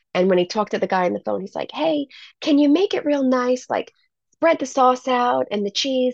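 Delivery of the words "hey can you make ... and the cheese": put-on pitched-up Alabama Southern accent. Retelling the speaker's dad phoning in a pizza order, in a Southern accent. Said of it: "He has a Southern accent".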